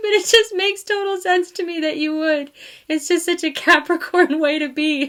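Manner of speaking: laughing through the words. Telling the listener their steadiness fits a capricorn, laughing while talking. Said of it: "I'm sorry I'm laughing".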